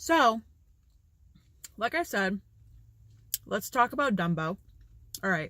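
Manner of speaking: speaking with mouth full of peanut butter. Talking while eating peanut butter bread, with a mouth full of peanut butter. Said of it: "It's hard to talk with peanut butter".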